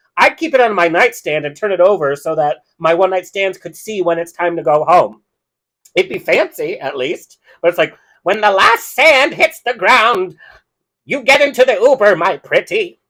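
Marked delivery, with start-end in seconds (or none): 8.2-12.8 theatrical storybook wicked witch villain voice. Joking about an hourglass on the nightstand, in a Wicked Witch impression. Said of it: "that was my Wicked Witch impression".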